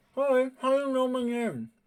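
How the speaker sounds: very high voice, words muffled by a mouthful. Voicing a character who is chewing a sandwich: talking with mouth full. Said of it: "he says through his mouthful".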